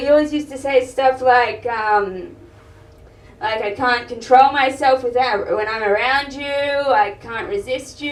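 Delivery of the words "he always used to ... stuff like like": usual speaking voice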